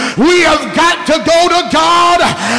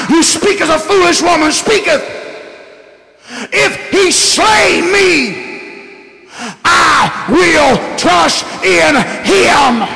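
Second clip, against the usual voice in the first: mock, slow, holding back tears through clenched teeth. Speaker acts out a man's reply to a woman, through gritted teeth. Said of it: "He said it with his teeth gritted together. He said it with a tear running down his eyes".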